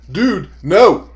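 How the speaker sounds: loud, exclaimed shout.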